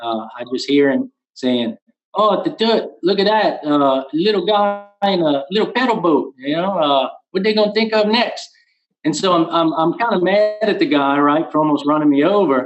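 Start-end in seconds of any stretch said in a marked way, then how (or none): 2.2-8.5 put-on broad, thick Cajun accent, pitched high. Retelling what a man who nearly ran him over said to his wife, thick Cajun accent. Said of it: "in the thickest Cajun accent".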